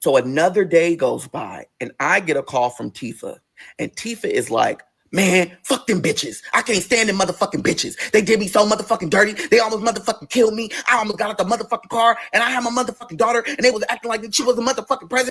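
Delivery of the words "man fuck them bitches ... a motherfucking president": angry, furious venting while crying. Retelling a phone call from Tifa: imitating a friend crying angrily. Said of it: "when Tifa gets frustrated and mad, she's crying".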